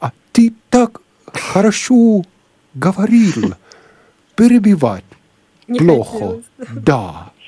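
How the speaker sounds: put-on Russian spoken with a strong Finnish accent, very high. Retelling what a Finnish sound engineer replied to him, in a strong Finnish accent. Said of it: "с сильным финским акцентом".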